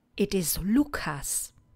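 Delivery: plain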